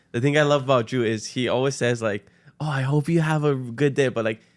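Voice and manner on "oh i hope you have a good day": sincere, earnest, heartfelt, with real conviction. Imitating how a shop worker wishes customers well: imitating Drew, said with conviction. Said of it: "he says it with such conviction".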